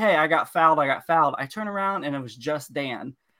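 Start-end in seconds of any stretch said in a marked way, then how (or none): 0.0-1.4 mock loud, protesting shout. Retelling a corner kick after being shoved: imitating own yelling at the ref. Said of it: "I'm yelling at the ref".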